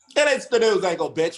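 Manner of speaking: put-on old-timey thirties newsboy voice, calling out. Opening another episode, the host announces the segment in a 1930s newspaper-seller voice. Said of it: "sounded like he was trying to like sell us a newspaper from like the nineteen thirties".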